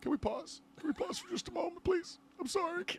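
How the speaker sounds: very high, very quiet, put-on tearful sobbing. Acting out breaking down while filmed reacting to a movie, mock crying. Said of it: "crying and bawling your eyes out".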